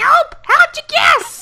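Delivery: very high, loud, squeaky cartoon mushroom voice. Reading a character's dialogue aloud, as challenged by a friend; Toad voice. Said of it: "read the rest of Cinnabar's dialogue in Toad's voice".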